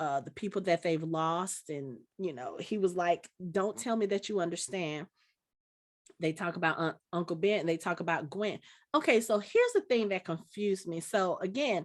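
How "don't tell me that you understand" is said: ordinary talk, nothing marked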